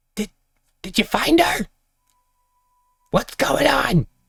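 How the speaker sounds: very high, shrill screeching. Narrating a game scene, voicing someone unseen who calls out, in a screeching voice. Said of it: "There's a screeching voice that calls out".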